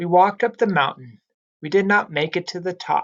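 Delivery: fluent delivery with brief pause after mountain. Reading aloud as a fluent reader, pausing naturally: pause after mountain. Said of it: "we could hear that I paused after mountain".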